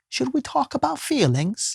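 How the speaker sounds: put-on very high, lilting, sing-song London accent. Telling how a friend asked him something on the drive home: her london accent. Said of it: "in her London accent?".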